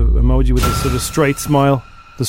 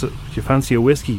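plain

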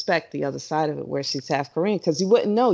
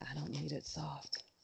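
creepy murmur, very soft and barely audible; 21 dB quieter than usual. Answering a remark that a dancer's style is too hard: creepy-sounding. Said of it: "That sounded way too creepy".

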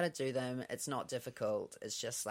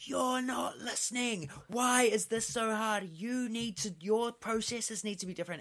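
mock man yelling, much higher, louder; 10 semitones higher, 5 dB louder than usual. Retelling how a man yelled at a woman trying to help him, imitating him yelling. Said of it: "fully just started yelling at her".

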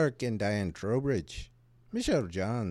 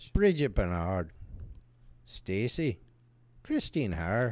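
put-on Irish accent. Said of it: "he's using his, uh, uh, Irish accent".

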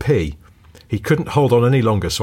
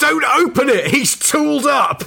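mock screaming, very high and stretched out. Retelling a panicked moment in a car, imitating a friend screaming. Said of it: "my mate screaming".

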